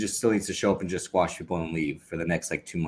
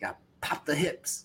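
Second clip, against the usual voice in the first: put-on New York accent, pitched higher; 9 semitones higher, 3 dB quieter than usual. Quoting what Taz says on commentary about suplexes: Taz impression. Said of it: "he doing every New York accent".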